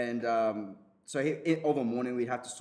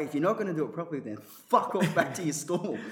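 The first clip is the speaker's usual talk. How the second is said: acted, pitched-up, snapping, furious yell; 6 semitones higher, 4 dB louder than usual. Recalling snapping at a semi-retired bloke who kept doing it badly: retelling a yell. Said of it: "I'm yelling at".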